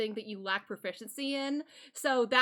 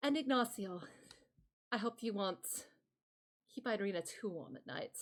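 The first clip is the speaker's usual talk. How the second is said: quiet, hushed character voice; 2 semitones lower, 9 dB quieter than usual. A narrator voicing a departing character's parting words, Strahd voice. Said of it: "Strahd is going to look back at you".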